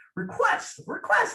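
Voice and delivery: very high indignant insistent voice. Recalling the most indignant moment of own speech at a trial; retelling own indignant high voice. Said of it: "Like my voice gets so high".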